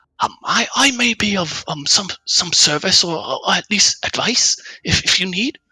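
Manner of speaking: small, very high little voice. The narrator voices a voice that calls out to you, in a small voice. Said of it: "It sounds like a small voice".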